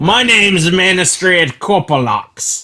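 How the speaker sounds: rough, gruff put-on Australian accent. A player settles on a voice for a character introducing herself: gruff Australian accent. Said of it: "I'll just kind of go gruff Australian".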